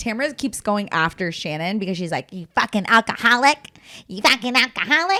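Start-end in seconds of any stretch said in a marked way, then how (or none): 2.3-5.2 squeaky, high, rat-like voice. Recapping Tamara going after Shannon, quote her in a Tamara rat voice. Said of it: "like in her Tamara like rat voice".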